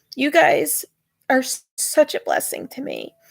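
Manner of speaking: high, tearful voice, crying with happy tears. Thanking the audience for being a blessing in their life: joyful crying. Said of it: "but I'm crying".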